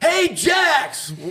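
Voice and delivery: put-on screaming. Retelling how a dad yelled from the crowd at a game: imitating a dad screaming from the stands. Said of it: "is up in the crowd screaming".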